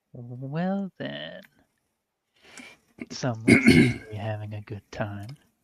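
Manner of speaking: quiet muttering under her breath. Voicing a character in a scene, muttering under her breath. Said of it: "She just kinda mutters under her breath".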